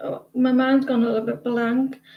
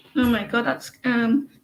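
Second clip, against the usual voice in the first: ordinary delivery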